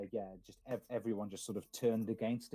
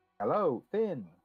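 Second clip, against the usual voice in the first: high, raised, automated telephone announcer voice; 6 semitones higher, 6 dB louder than usual. Voicing the Mage's AI calling a player: BBC speaking clock woman voice. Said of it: "the B B C woman voice, the speaking clock".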